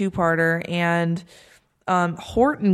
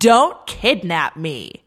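mock wooden, unconvincing acting. Retelling a scene, imitating an unconvincing actress playing a kidnapped prisoner. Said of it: "so non-convincing, unconvincing".

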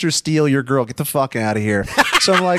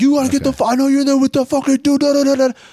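put-on, all-out, high-pitched screaming; 12 semitones higher, 3 dB louder than usual. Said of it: "screaming through the door".

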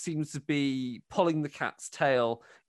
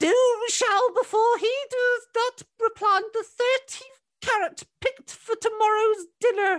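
put-on high, raised cackling old voice; 5 dB louder than usual. Aunt Mags stops rocking, looks into the fire, and proclaims: cackling old voice. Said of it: "and proclaims in a cackling old voice".

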